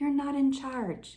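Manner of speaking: soft, gentle, caring voice. Retelling a prayer in which God answers you, imitating God's gentle, soft voice. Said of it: "God's voice is so gentle and so soft".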